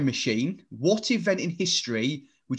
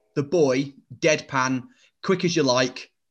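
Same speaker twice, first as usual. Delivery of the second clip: usual speaking voice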